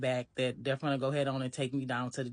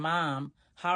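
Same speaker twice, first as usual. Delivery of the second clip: ordinary delivery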